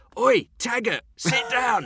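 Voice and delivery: very loud, very high shouting. Recalling a bloke who always shouted at the Manchester United manager, retelling a loud shout. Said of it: "shout out in a really loud voice".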